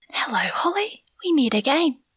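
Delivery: quiet threatening whisper. A narrator reading a woman holding a knife to a captive's throat, soft menacing whisper. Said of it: "the woman whispered in her ear".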